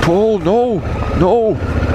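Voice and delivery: objecting, protesting voice.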